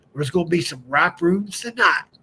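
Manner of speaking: put-on West Virginia country accent. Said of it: "I'm going to do my dad's country accent".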